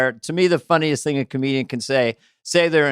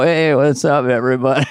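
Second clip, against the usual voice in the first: mock low-fidelity casual voice. Retelling how Spade greeted the audience on tour: imitating Spade's lo-fi attitude. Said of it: "he had a lo-fi kinda attitude".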